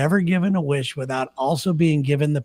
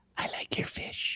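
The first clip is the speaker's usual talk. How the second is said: close, hushed, very quiet, soft whisper. Retelling how a woman giving him a massage whispered in his ear; imitating a whisper. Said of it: "she whispers in my ear".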